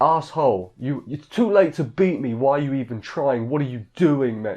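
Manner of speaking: irritated, annoyed, exasperated, griping outburst. Retelling a race story, quoting the woman who lost, mock-annoyed outburst. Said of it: "She's so annoyed".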